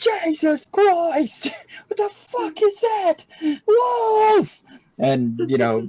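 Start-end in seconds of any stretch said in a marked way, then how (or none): 0.0-4.6 very high, frightened, panicked yell, "wolf" stretched. Voicing a wagoneer who spots a wolf: panicked wagoneer. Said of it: "he basically is like".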